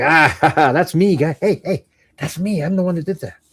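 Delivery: high, giddy, gleeful, play-acted show-off bragging. Imitating a stalker seeing their work discussed daily: imitating an excited stalker. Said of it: "They're so excited about it".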